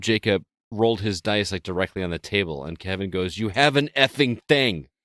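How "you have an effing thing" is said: mock drunken, high, loud, sudden shouting outburst. Retelling how Kevin shouted at Jacob for rolling dice on the table, retelling a shout. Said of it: "Like just shouted at him".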